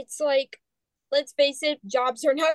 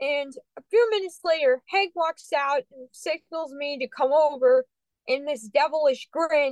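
plain

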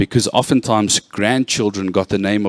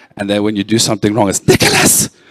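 plain

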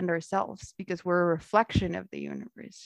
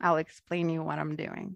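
ordinary delivery

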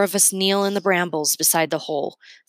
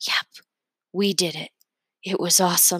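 hushed, whispering voice. Reading a story where a hurt boy answers from a hole: whispering. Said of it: "he whispers".

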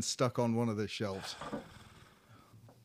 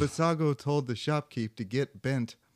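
ordinary talk

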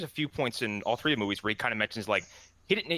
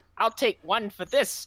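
put-on tiny, very high elderly lady voice; 10 semitones higher, 4 dB louder than usual. Retelling what an old lady said at the box office: imitating a tiny old lady. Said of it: "this tiny little old lady walked to the box office and goes".

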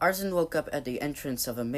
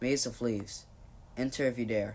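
plain reading voice

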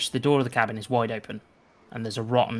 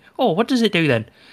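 put-on curious kids' voices, high and loud; 8 semitones higher, 7 dB louder than usual. Voicing kids poking a creature and asking what it does: voicing local kids. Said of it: "poking Morgo, going".

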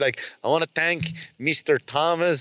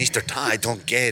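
low, clumsy, bad Norwegian accent attempt; 5 semitones lower than usual. Acting out the Norwegian man's reply to his instruction, in an attempted Norwegian accent. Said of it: "I'm trying to do a Norwegian accent".

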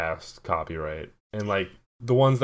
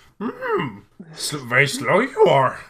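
high, loud, swooping character voice, pushed out; 8 semitones higher, 5 dB louder than usual. Joking back at another speaker: Yoda impression. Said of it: "do Yoda impressions".

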